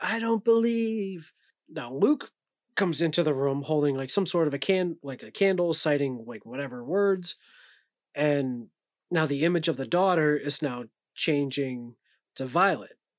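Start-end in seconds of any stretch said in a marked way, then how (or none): 0.0-1.3 mock yelled outburst, high-pitched. Recounting a scene where someone starts yelling; imitating someone yelling.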